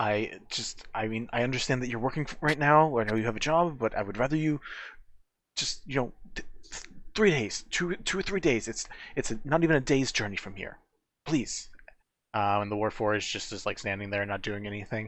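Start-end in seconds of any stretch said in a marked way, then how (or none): 0.0-11.7 pressing, pleading, begging voice. Narrator voicing a half-elf addressing the owl folk at a table, pleading. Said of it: "the pleading of the half elf".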